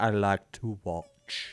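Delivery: strange, deliberate, very slow, drawn-out phrasing. Imitating a gym owner's weird language: imitating the owner's weird speech. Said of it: "and he speaks like that".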